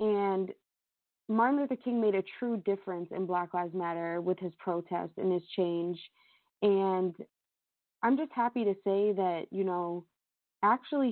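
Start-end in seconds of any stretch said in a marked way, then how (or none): none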